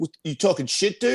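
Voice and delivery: hostile, confrontational, aggressive, high-pitched delivery. Retelling a fighter's angry phone call: imitating Gabe Rudiger, aggressive. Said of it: "He's very aggressive".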